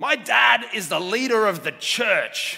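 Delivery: high, shrill, proud, boastful voice at full volume. Retelling what a boy told the kindergarten teacher, quoting his loudest voice. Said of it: "in his loudest voice".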